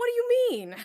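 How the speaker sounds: put-on shrieking, very high, loud, shocked disbelief. Imagining a shy younger self hearing about streaming: imitating shocked surprise. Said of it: "she'd be like".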